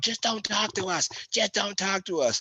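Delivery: play-acted frantic outburst, very high pitch, freaking out. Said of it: "your coach out there freaking out".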